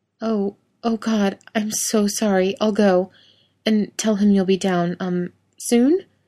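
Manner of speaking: shrinking, embarrassed small voice, slow. Anna apologizes and says she'll go, in a small, embarrassed voice. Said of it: "Anna's voice is small and embarrassed".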